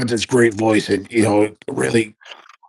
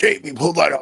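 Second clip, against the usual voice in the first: put-on gravelly voice, pitched higher; 6 semitones higher than usual. Quoting what he always says on Rogan's show: Alex Jones impression. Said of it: "he's always like".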